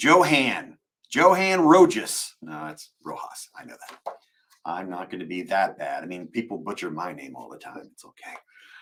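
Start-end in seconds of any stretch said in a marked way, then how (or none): 0.0-2.3 Southern Texas accent, pitched up. Reading a name off the queue, trying it in a Southern Texas accent. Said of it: "I could be real Southern in Texas about it".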